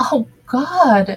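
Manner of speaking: high, gasped exclamation. Hearing the debate episode is in two weeks, [name] gasping. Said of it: "[name] gasped".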